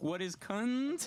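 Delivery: drawn out, rising "cunt".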